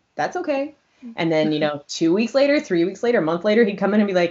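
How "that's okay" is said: loud, playful, put-on flirty voice. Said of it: "pretend to flirt with my mom".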